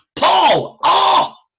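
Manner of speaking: throaty yell from the throat, very high. Explaining voiced sounds, the speaker yells across the street: yelling from the throat. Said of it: "It's from my throat".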